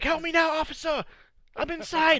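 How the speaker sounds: mock very high, pleading shout. Retelling a role play gun battle, imitating own yelling. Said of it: "I'm yelling at my mic".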